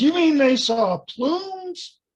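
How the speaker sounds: high, slow, loud holler in amazement. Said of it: "and he just hollered".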